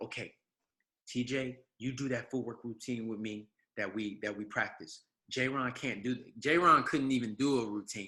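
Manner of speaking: put-on whisper. Retelling whispering a plan to friends before dancing: retelling a whisper. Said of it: "I whispered to my friends".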